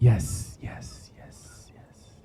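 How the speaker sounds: very quiet, hushed, whispered character voice. Voicing a giant tree answering the adventurers: whispering tree voice. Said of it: "he's whispering, guys".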